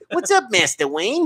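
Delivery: high cartoon rabbit voice. Joking around in conversation with the others, the speaker does a Bugs Bunny voice. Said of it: "Mine sounds like Bugs Bunny".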